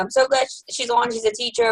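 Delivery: ordinary talk, nothing marked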